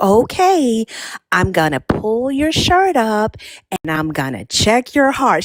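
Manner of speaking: speaking deliberately slowly, drawn out. Retelling how a new resident doctor spoke to a patient, imitating a doctor's slow talking. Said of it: "That could be why you talk so slow".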